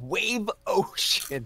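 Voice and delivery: put-on thrilled, high, bursting excited outburst. Showing what they say every time they see it, imitating Dan saying it excitedly. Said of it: "in that exact voice go Wave Ocean because I'm so excited".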